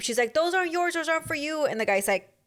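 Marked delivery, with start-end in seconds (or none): 0.3-1.7 put-on yelling, pitched up. Retell what she said to the guy in the clip as he ignored her, imitating a woman yelling. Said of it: "so she's yelling at him".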